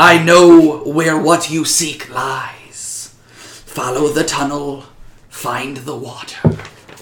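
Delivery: wet, slithering voice. Narrator voicing an unseen speaker inside a listener's mind; wet, slimy voice. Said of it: "A wet, slimy voice slithered into your mind".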